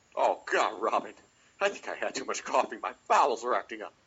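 breathy, campy heroic voice. Giving it a try, addressing Robin in an Adam West impression. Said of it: "I'm gonna give it a try".

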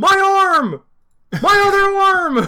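very high, shrill, loud screaming cries. Describing a Sharknado victim heard in the background; imitating someone screaming. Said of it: "And he's just screaming about".

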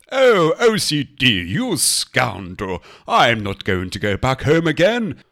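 different put-on comic voice. Answering the nagging ocd voice, in a put-on voice. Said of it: "you can respond to it with this voice".

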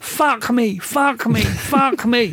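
shrill, very high, drawn-out screaming. Retelling a woman standing on chairs behind the speaker, retelling a woman screaming. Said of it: "And she's screaming".

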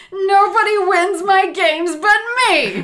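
ear-splitting, shrill, very loud screech. Narrating a story, voicing a character in a full-on tantrum: screeching. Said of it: "he screeches".

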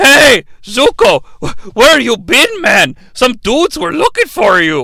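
put-on wild old man voice. Parodying a scene, voicing Uncle Iroh talking to Zuko, Uncle Iroh in crazy grandpa voice. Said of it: "the voice that I used for the crazy grandpa".

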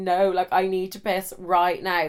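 ordinary talk

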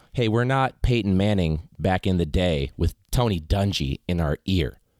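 ordinary delivery

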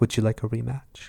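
hushed, creepy, quiet little murmuring voice. Retelling how a character asks for a rematch: Anna's quiet creepy little voice. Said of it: "really quietly".

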